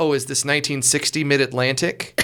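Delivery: normal talking voice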